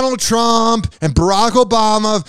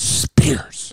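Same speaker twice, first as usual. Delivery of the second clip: Spears heavily stressed, lawyerly tone; 7 semitones lower, 5 dB quieter than usual. Mimicking how a lawyer said the name, heavy emphasis on spears. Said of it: "I gotta put an emphasis on it because I'm an elite rich lawyer".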